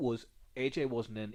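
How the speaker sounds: ordinary delivery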